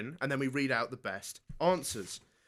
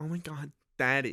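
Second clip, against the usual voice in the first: put-on fake California accent; 4 dB quieter than usual. Showing the group how daddy sounds in a put-on Cali accent. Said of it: "said daddy in your Cali accent".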